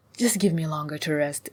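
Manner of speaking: ordinary delivery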